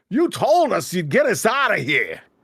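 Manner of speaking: high, swooping character voice. Redoing a character's line in the proper voice: Mister Stinky's voice. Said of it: "Mister Stinky says".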